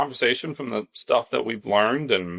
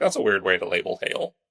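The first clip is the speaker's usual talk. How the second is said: ordinary talk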